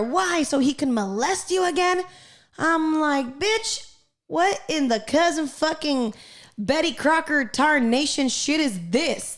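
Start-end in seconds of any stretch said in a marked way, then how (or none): 0.0-2.0 play-acted loud yelling. Retelling a mother's cruel reply to her daughter: imitating a mother yelling. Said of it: "was yelling at her fucking ten-year-old daughter".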